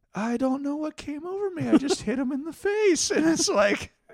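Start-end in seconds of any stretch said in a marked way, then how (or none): 0.2-3.1 very high-pitched character voice. Retelling a scene where Beverly Crusher speaks after a smash cut: imitating Beverly Crusher. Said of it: "Beverly Crusher being like".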